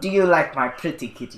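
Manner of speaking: sinister, put-on cartoon villain voice. Playing a character who pets another on his lap: villain voice. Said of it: "turn around like a villain".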